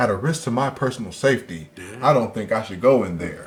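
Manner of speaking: completely normal, ordinary, plain voice. Imitating Scoop Watts refusing to enter a dressing room: most normal voice ever. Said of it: "the most normal voice ever".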